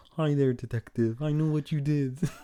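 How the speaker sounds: goofy cartoon frog puppet voice. Retelling a spooky voice that suddenly speaks to a detective, in a Kermit voice. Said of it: "it sounds like Kermit".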